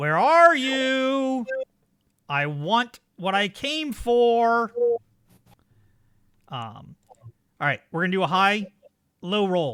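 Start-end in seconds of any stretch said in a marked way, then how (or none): 0.0-4.7 very slow, loud, high shout, you drawn out. Voicing the cannibal searching for an escaped player in the dark: shouting. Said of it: "you hear him shout".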